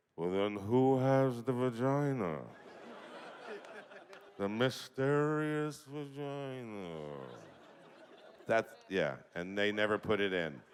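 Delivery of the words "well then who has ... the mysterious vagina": deliberate, slow, drawn-out put-on cartoon character voice. Acting out a pitched joke where Zoidberg speaks to Fry: Zoidberg voice. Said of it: "That Zoidberg voice saying that V word".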